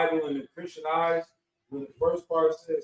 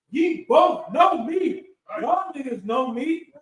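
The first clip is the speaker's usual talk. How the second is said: play-acted, slow, raised-voice yelling; 9 semitones higher, 4 dB louder than usual. Explaining a scripture verse about crying aloud in the temple, acting out a yell. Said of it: "He's raising his voice. He's yelling at them".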